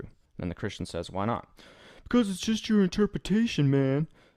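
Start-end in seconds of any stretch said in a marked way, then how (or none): 2.0-4.1 very high, loud, put-on laid-back hippie voice. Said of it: "I'm gonna do an atheist voice. It's gonna be like a hippie".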